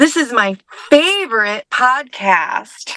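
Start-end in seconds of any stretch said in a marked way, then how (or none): 0.9-1.6 extra stress placed on favorite. Retaking a podcast line after being asked for more emphasis: stress on favorite. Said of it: "A little more emphasis emphasis on favorite".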